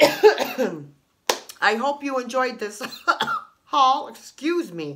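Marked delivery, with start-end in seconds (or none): 0.0-4.1 loud, slow, choking speech broken by coughing. Thanking viewers for watching the haul, coughing while talking. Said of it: "I'm choking myself".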